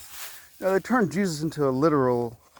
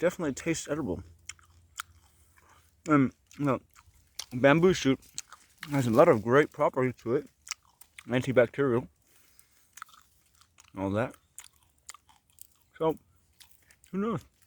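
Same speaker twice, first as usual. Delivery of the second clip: speaking with mouth full while chewing. Tasting bamboo shoot for a video, talking with mouth full. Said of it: "Sorry for eating with my mouth full".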